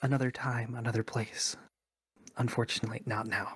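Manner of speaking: hushed, half-whispered stage whisper in character. Slipping away from the smith as an invisible character: half-whispering in character. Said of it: "I'm gonna whisper".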